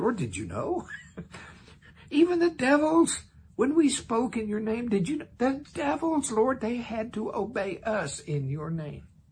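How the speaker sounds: astonished, marvelling, high amazed exclamation. Speaking for them as they report to the Lord, the speaker is acting out amazed surprise. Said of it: "I could just hear the surprise in their voice".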